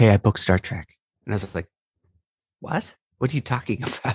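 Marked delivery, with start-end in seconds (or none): 0.0-0.9 put-on whisper, whispered aside. Retelling how Mary leaned over with her news: imitating a whisper. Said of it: "sort of just like whispers to my ears".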